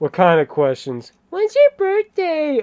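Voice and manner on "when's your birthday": odd, squeaky, very high put-on voice. Reading aloud a woman's text messages, hers in a weird voice. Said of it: "in a weird voice".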